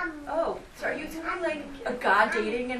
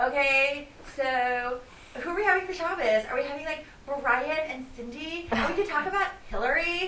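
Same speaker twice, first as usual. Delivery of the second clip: dry, mocking, sarcastic tone. Speaker quoting their kids, imitating sarcastic comments. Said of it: "Like kind of sarcastic comments from my kids".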